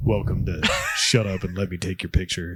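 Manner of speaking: very deep, low, dropped put-on voice. Introducing the next segment, speaking in a really deep voice. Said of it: "talk in a really deep voice".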